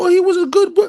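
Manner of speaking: very high, loud fake weeping and sobbing. Acting out people mourning as judgment comes: mock crying. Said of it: "when y'all out here crying".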